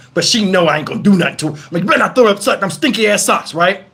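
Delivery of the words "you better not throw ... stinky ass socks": put-on, firm, assertive fatherly tone. Retelling warning a child not to throw a sock: imitating own assertive warning. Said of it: "I'm trying to be assertive as a father".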